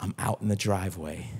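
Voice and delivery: low, very quiet, barely audible half-whisper. Retelling what your daughter said to you, imitating her half-whispering. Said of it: "Because she's whispering".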